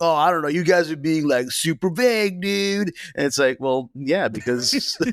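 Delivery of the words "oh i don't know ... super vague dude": mellow, laid-back, high surfer-dude voice. Mimicking reviewers who complain about vagueness, the speaker uses a surfer-dude voice. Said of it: "why are you such a surfer man?".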